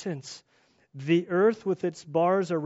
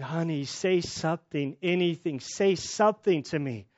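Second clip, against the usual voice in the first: plain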